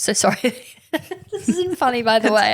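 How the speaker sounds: talking through helpless laughter. Reacting to a grim story from another speaker, laughing while talking. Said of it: "I don't know why I'm laughing".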